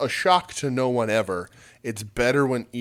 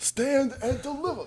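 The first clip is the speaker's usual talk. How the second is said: voice pitched way up high; 14 semitones higher, 4 dB quieter than usual. Repeating a wrestling show's name as a joke: Tony Khan impression. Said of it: "That was my Tony Khan impression".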